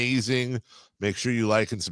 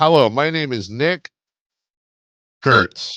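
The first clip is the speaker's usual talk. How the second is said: slow, loud, raised show-host announcer voice; 4 semitones higher, 7 dB louder than usual. Pitching a joke promo, imitating Nick Kurtz hosting. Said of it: "you know what'd be funny is if Nick Hurst hosted".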